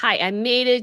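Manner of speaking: ordinary delivery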